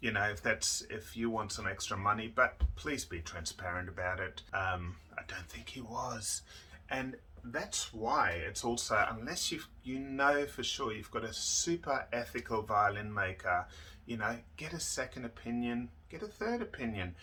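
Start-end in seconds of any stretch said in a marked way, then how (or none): 4.5-6.4 in a whisper.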